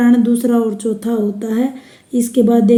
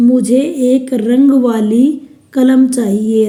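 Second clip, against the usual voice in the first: रंग वाली pushed forward with extra stress. Example sentence about wanting a pen, extra stress on 'रंग वाली'. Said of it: "रंग वाली पर मैं ज़्यादा जोर दे रही हूँ".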